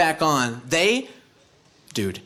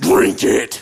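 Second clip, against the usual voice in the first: low, loud, aggressive voice. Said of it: "with an aggressive voice says".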